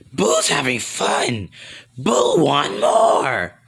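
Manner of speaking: slow, scratchy, rasping monster voice. Narrating a fight scene and voicing Boo, scratchy Boo voice. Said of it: "My voice sounds so scratchy".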